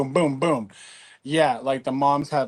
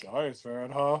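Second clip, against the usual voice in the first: deep, put-on, fake macho manly voice; 10 dB quieter than usual. Speaker retells a guy's question to them, put-on manly voice. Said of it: "throwing a manly, manly voice".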